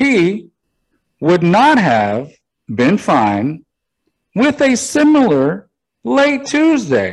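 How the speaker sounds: slow, deliberate sounding out of every word. Reading a football article aloud in Kamala Harris voice, words sounded out. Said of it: "I'm going to read it a little bit in Kamala voice".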